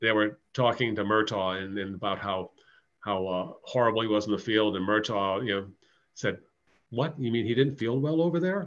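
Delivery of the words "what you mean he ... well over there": higher, play-acted sarcasm, laid on thick. Retelling someone's reply to complaints about another man's fielding: imitating someone's sarcasm. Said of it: "Just sarcastically".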